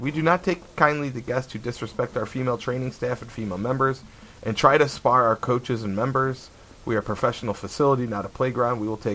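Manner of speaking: ordinary talk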